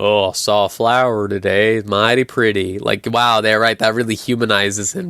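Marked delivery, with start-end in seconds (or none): 0.0-2.8 put-on cowboy voice dripping with mockery. Mocking a journal line by Arthur Morgan: imitating Arthur Morgan. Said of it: "his journal that he writes where he's like".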